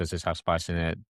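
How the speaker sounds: usual speaking voice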